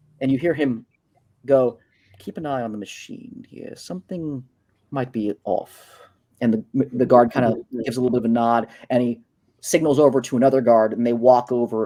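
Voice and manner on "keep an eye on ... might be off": quiet hushed whisper. Voicing a character who warns a guard to watch the machine: whispering. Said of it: "he whispers over to the guard".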